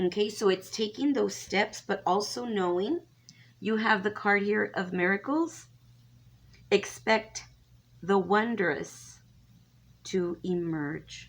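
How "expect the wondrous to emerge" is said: very slow, halting, stop-start reading. Reading a card's text off the screen backwards, very slowly. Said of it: "I read that so slowly".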